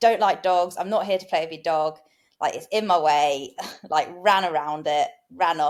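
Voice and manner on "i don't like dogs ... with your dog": normal talking voice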